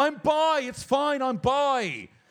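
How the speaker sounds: very high, very slow, drawn-out yelled scream. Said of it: "I'm screaming into the".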